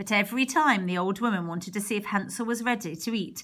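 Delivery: ordinary delivery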